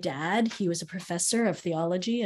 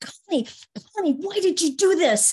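loud, high-pitched yelling. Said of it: "he yells at my teacher".

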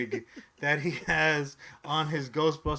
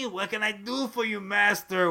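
put-on unidentifiable European accent; 5 semitones higher than usual. Acting out someone scuttling around, serving his master, in a vaguely european accent. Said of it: "With like a very vaguely European, unidentifiable accent".

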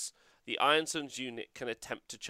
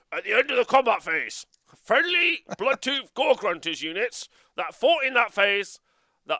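put-on orc voice, higher and louder; 9 semitones higher, 9 dB louder than usual. Reading a game rule aloud because someone asked: orc accent. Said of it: "in the accent of a orc".

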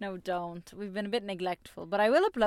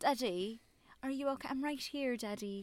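put-on soft, overly posh little boy voice; 4 semitones higher, 7 dB quieter than usual. Mocking the boy's voice from the film being discussed, imitating a posh child's voice. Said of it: "he was a bit too posh".

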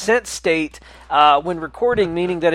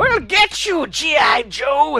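put-on hissing villain voice, higher; 9 semitones higher than usual. Comparing a lawyer to a cartoon villain: Commander Cobra voice. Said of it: "sounds a lot like Commander Cobra".

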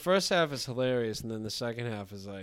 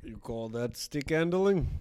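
put-on Russian accent; 2 semitones higher, 3 dB louder than usual. Asked for your best Russian accent, answer in a Vladimir Putin voice with a Russian accent. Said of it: "Give me your best Russian accent".

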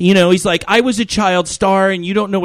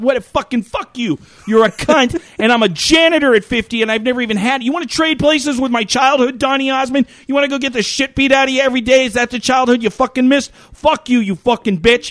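put-on furious ranting, higher pitch; 6 semitones higher than usual. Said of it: "That's quite a rant".

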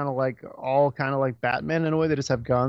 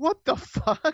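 what the fuck stretched out, high, slow, baffled. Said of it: "I was like".

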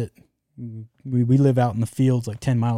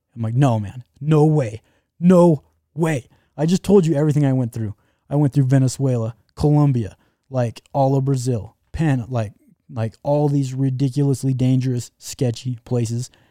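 normal talking voice

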